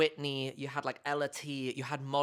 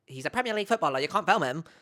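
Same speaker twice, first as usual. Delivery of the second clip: loud, rattled-off, irritating, grating put-on voice; 3 semitones higher, 5 dB louder than usual. Retelling what a woman said in a video, mocking her annoying voice. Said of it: "albeit in an anno- annoying voice".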